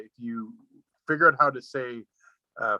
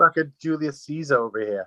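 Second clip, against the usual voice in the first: put-on Boston accent, played for fun; 3 semitones higher than usual. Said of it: "fun to say in the Boston accent".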